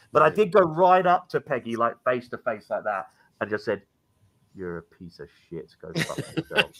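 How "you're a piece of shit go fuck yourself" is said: very low, very quiet, hushed whisper. Retelling confronting someone face to face at a spirit box session, retelling a whisper. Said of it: "I had to whisper it".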